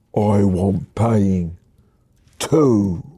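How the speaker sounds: put-on husky voice. Narrator reading as Ivy, who grabs you round the throat; Ivy's husky voice. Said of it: "says in a husky voice".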